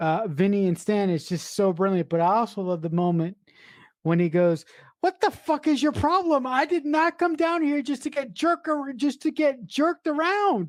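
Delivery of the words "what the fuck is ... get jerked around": mock exasperated, high, annoyed outburst. Retelling a film scene where Vinny snaps at Stan: imitating Vinny annoyed. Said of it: "he's so fucking annoyed".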